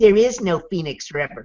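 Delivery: put-on, really smug, self-satisfied know-it-all tone. Retelling what people have said to the speaker, mock-smug. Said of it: "said really smugly".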